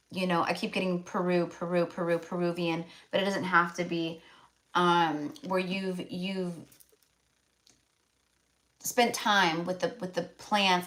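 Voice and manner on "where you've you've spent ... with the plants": stuttering, stumbling over words. Telling a listener what they sense about them, the speaker keeps stuttering. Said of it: "I don't know why I'm like stuttering".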